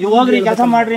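normal talking voice

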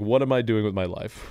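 ordinary talk

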